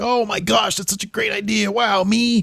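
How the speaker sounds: high, mocking, fake gushing. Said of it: "for his very mocking".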